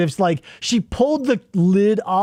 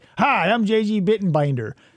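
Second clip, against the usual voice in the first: rough police-officer voice. Retelling a comedy skit's taped instructions: gruff cop voice as J J Bittenbinder. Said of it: "a gruff cop, maybe, J J Bittenbinder".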